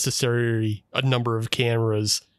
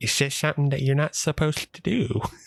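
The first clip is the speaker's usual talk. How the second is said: affected slight lisp with a creepy edge; 3 semitones higher than usual. Describing a character with a slight lisp, imitating a creepy lisp. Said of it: "has an affected creep to him".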